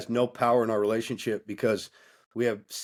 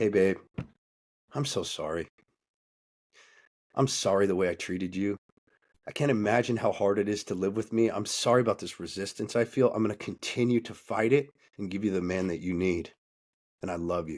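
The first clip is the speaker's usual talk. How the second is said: humble submissive tone, lower; 3 semitones lower than usual. Showing how a man should submit to his wife: humble apology. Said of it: "It looks like this".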